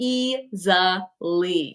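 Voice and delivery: emphatic easily, stretched out very slow.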